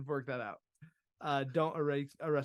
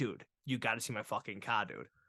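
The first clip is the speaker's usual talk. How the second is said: heavy, thick put-on Boston accent; 5 semitones lower than usual. Retelling a man who came up wanting to show his car, thick Boston accent. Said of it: "he's got the thickest Boston accent".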